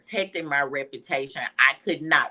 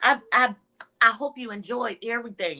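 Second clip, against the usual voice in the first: put-on sugary, warm-and-fuzzy, high, sweet voice; 6 semitones higher than usual. Retelling greeting catering customers: imitating her own sweet customer talk. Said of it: "making people feel warm and fuzzy".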